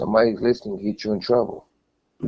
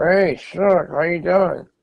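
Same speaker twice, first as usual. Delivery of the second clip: slow, high words squeezed out through the teeth; 7 semitones higher than usual. Showing how a man with fake teeth greets people, imitating a man talking through his teeth. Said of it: "Like through his teeth".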